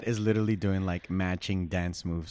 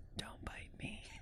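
hushed, gentle, very soft whisper. Retelling a dog video, imitating the owner: imitating Deb's soft whisper. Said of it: "very softly whispers".

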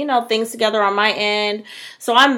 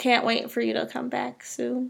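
very quiet, very soft, sorrowful voice; 3 semitones higher, 10 dB quieter than usual. Sending a shout-out to Liv and awaiting her return, sad. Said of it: "that sounded so sad".

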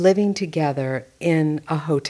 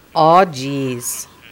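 put-on Fargo accent with long o's and strong e's; 3 semitones lower, 4 dB louder than usual. Speaking in a movie with a dialect coach, use a Fargo accent with long O's, strong E's. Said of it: "a pure Fargo accent has long O's and strong E's".

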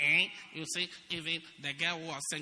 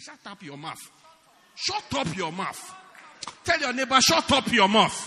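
put-on Nigerian English accent; 7 semitones higher, 11 dB louder than usual. Speaking to a congregation, the speaker demonstrates the phrase in a Nigerian accent. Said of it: "You can say it like a Nigerian".

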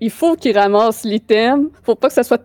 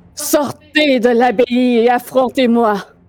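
ringing, resonant voice carrying far. Calling the heroes out of the abbey to fight, in Strapp's booming, resonant voice. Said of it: "une voix qui porte, qui résonne dans toute la place".

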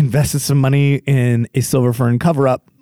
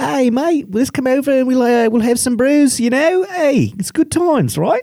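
put-on very high Australian accent, Aussie bloke voice; 12 semitones higher than usual. Speaker imitates how New Zealand army guys talk, in their accent. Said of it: "a bunch of guys that talk like this".

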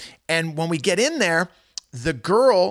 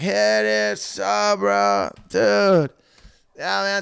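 play-acted drawn-out, rough, very slow, creaky drunk babble; 4 semitones higher than usual. Retelling meeting an angry intruder: imitating acting blackout drunk. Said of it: "I started pretending I was, like, blackout drunk".

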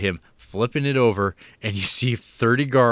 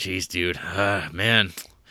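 mock disappointed tone, very slow and drawn out; 3 semitones lower, 3 dB quieter than usual. Retelling how a floor supervisor looks at a prisoner: imitating a disappointed man. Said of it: "he's even disappointed in him".

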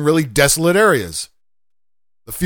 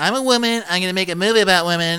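mock ditzy actress voice, high and fast. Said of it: "give some broad who's".

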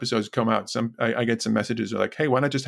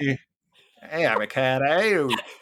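silly, goofy put-on Australian accent; 3 semitones higher than usual. Acting out the first prisoner off the boat, silly Australian accent. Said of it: "it's a very silly Australian accent".

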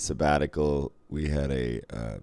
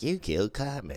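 clumsy, put-on, high-pitched cartoon kid voice; 6 semitones higher, 6 dB quieter than usual. Recalling how everybody quoted the show, doing a bad cartoon kid impression. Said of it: "Everybody had a bad fucking impression, like mine just now".

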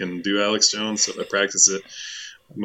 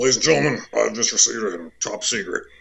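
put-on ranting radio host voice; 3 dB louder than usual. Reading texted lines aloud as Alex Jones: Alex Jones impression.

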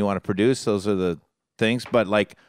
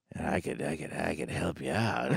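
put-on gruff old voice, very low, quiet, raspy; 7 semitones lower, 12 dB quieter than usual. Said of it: "You do a good impression".

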